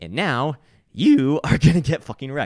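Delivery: very loud, high yell with voice cracking. Explaining that a strong trend will wreck traders, voice cracking. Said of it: "as my voice cracks".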